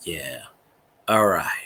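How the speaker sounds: deep, very low, laid-back mellow tone. Describing a YouTuber's way of talking, imitating a mellow voice. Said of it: "He's got that mellow voice".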